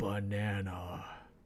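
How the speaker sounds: very low, super-serious, grave mock profundity. Looking super serious into the camera and saying 'banana': mock-serious 'banana'. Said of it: "look super serious into the camera and go banana ... the inflection of my voice is meant to int- imply depth and poetry".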